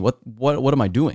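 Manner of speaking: normal talking voice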